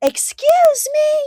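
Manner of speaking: piercing, shrill scream, very high and very loud. Retelling how a woman at her apartment window screamed at the speaker, imitating someone screaming. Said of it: "she throws the window up and she screams out at me".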